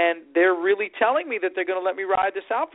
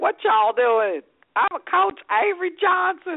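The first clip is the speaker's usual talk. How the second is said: very high-pitched southern twang; 10 semitones higher than usual. Describing a coach, imitate Avery Johnson's southern twang. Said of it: "He's got that little southern twang".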